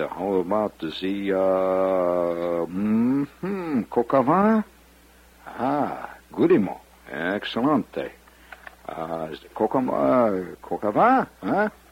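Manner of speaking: over-the-top, hammy fake French, very slow and swooping. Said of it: "I'm playing it up big".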